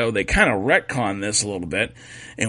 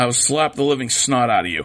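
ordinary talk, nothing marked

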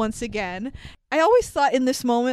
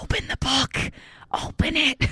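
hushed stage whisper; 3 semitones higher, 3 dB quieter than usual. Retelling a film scene where one character urges another: imitating a whisper. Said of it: "Harry whispers over to him".

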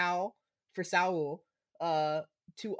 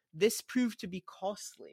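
British English accent, match commentary tone. Recapping a football match, the speaker slips into a British accent. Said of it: "I don't know why I turned into a British accent".

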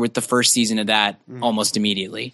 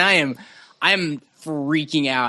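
normal talking voice

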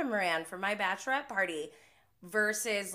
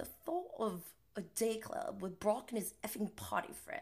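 whispered, breathy, put-on English accent; 7 dB quieter than usual. Retelling a reality TV guy's line, then trying his accent: James Kennedy accent. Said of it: "I should do his accent".

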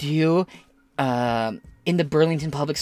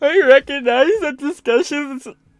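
acted, shrill, very high, loud whining voice; 11 semitones higher, 5 dB louder than usual. Mocking the words of a letter he calls crybaby: mocking whiny voice. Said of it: "This whiny voice is actually starting to hurt me".

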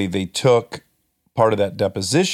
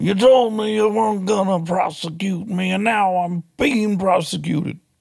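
clumsy bad put-on voice, very high and drawn out; 11 semitones higher than usual. Asking to do one more impression, then doing a bad impersonation of him. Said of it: "a bad impersonation of him".

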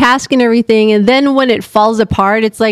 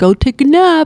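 dopey, dim-witted, stupid-sounding put-on voice; 3 semitones higher than usual. Retelling what the husband said, imitating him sounding stupid. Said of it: "you just imitated me sounding stupid".

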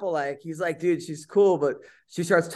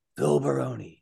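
whisper pitched much lower; 5 semitones lower, 4 dB quieter than usual. Describing a guy who narrates documentaries, saying the name in whispered Godfather Marlon Brando voice. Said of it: "like he whispers".

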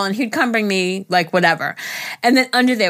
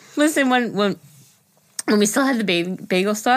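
tearful, halting voice, getting teary. Starting a sentimental story about old notes, getting teary while talking. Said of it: "I'm crying".

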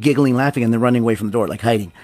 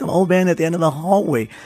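put-on little girl voice, pitched up, giggling throughout; 6 semitones higher than usual. Telling a story about the little daughter, imitating her giggling as she spoke. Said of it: "so she's giggling".

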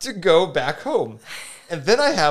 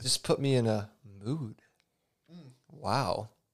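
very low, very soft, suggestive hushed delivery; 7 semitones lower, 12 dB quieter than usual. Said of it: "don't say it like that".

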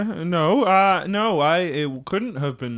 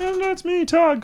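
tiny put-on voice, higher; 11 semitones higher than usual. A big guy at the door introduces himself in Tug's tiny little voice. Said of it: "Tiny little voice for a big guy".

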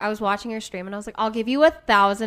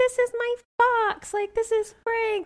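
put-on very high, slow, small child's voice; 13 semitones higher than usual. Retelling a funny video, imitating a little child's voice. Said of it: "a little child's voice".

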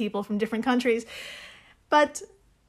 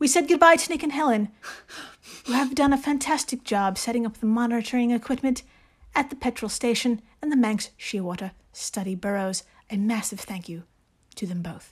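put-on reading-aloud voice. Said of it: "reading each entry to yourself in your best Jane Austen voice".

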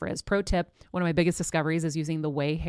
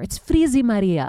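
put-on loud Greek accent with thick vowels; 4 semitones higher, 7 dB louder than usual. Recalling what her mother used to say, imitating mom's Greek accent. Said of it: "my mom would say in her Greek accent".

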